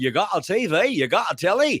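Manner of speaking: very bad, heavy put-on Scottish accent. Redoing an old joke for a caller: very bad impression, very Scottish. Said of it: "my very bad impression of".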